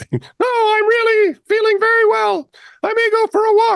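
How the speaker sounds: very high, soothing, placating ventriloquist-style voice. Acting out a woman voicing a man by moving his jaw, high-pitched voice. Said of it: "speaking in a high voice".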